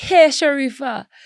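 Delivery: bad put-on Jamaican accent, very high. The speaker imitates how he used to greet her, bad put-on Jamaican accent. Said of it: "he used to do a Jamaican accent for me".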